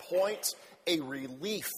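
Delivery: ordinary delivery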